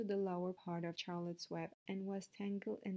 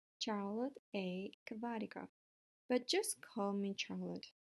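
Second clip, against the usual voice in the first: plain reading voice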